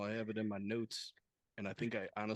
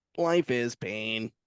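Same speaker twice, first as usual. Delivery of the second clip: robotic computer voice, louder; 2 semitones higher, 9 dB louder than usual. Asked to read it like an AI, in a Stephen Hawking voice. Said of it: "like uh Stephen Hawking would read it?".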